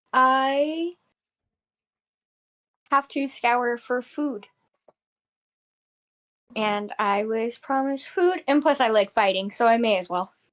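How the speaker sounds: slow, reserved, reticent tone with drawn-out I. Answering in character why she seeks this adventure, speaking more quietly. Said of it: "she's obviously gonna get more quiet".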